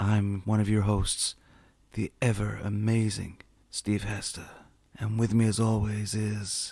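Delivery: steamy, sultry, put-on reading voice. Introducing the podcast hosts: put-on Fifty Shades reading voice. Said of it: "you sound like you're getting ready to read Fifty Shades of Grey".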